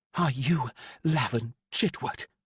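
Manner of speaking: harsh, cutting, high-pitched tone. Narrator reading a woman questioning the man she stepped toward: harsh voice. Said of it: "she asked in a harsh voice".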